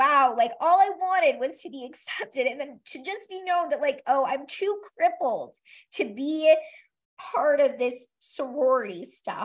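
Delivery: choked-up tearful voice on the verge of crying. Recalling the night she was rejected, now tearful, close to crying. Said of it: "it makes me cry now".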